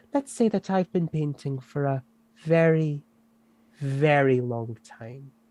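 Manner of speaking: put-on posh, upper-class accent. Voicing a centuries-old painter talking to a player: posh voice. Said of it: "I'm just gonna go posh".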